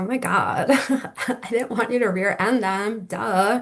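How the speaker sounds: put-on valley girl voice. Describing a wife apologizing to her cranky husband, in a Valley Girl voice. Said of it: "I can almost just hear like the Valley Girl".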